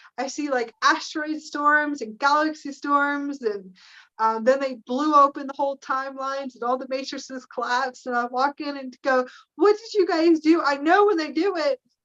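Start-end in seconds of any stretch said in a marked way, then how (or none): 9.6-10.6 raised, high-pitched yell. Retelling walking in on the blue beings: retelling own yelling. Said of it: "I start yelling".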